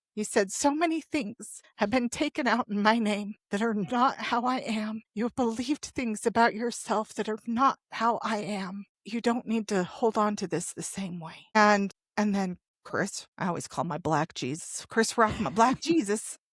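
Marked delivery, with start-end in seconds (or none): 0.5-11.4 choked-up, tearful, on the verge of crying. Recounting what God said to them, about to cry. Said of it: "and I'm going to cry".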